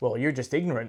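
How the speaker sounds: mock expressionless, blank, flat, unmoved deadpan. Retelling a film scene at dinner with the parents: imitating Ray's blank delivery. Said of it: "he was still blank and like".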